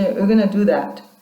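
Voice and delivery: flat statement tune with pitch dropping on that. Explaining an intonation mistake with the statement version: falling intonation at the end. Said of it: "following intonation".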